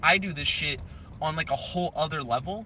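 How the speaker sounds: ordinary delivery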